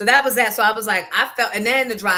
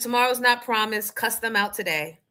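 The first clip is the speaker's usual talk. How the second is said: ordinary talk, nothing marked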